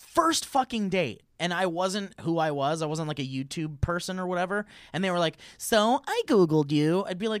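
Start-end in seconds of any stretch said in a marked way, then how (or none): 5.6-7.1 silly put-on voice, higher and louder. Acting out a date who admits to Googling them: stupid voice. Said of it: "of course not with that stupid voice".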